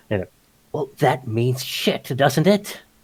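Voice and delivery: loud, hissing stage whisper. A man leans in, checking no one is eavesdropping: hissing stage whisper. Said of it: "he hisses with that you know uh, I think I'm whispering voice".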